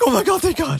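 put-on, loud, very high, frantic outburst of relief. Retelling a mother's reaction on the phone: imitating a frantic mom. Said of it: "her mom's just fucking frantic".

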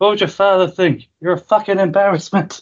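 high-pitched mock shout.

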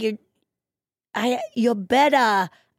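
mock, deliberately bad put-on British accent. Retelling a bit where someone tries a British accent: imitating Jada's fake British accent. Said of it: "impersonate Kelly's British accent".

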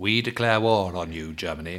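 mock-serious announcer voice. Playing out a mock radio announcement with a co-host, put-on serious voice. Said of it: "put your serious voice on".

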